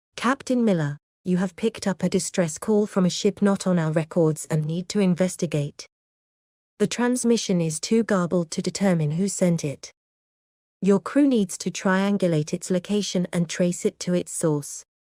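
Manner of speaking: acted soft gentle voice. Voicing Mother relaying a distress call to Captain Miller: Mother's gentle voice. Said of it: "with Mother's gentle voice".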